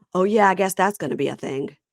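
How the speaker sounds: put-on muttered aside under breath. Retelling an argument, speaker quotes what he said: retelling a mutter under breath. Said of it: "he says under his breath".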